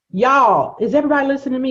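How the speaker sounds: yelling. Telling listeners about a guest's seven-figure practice: yelling. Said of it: "'Cause I'm yelling in your ear right now".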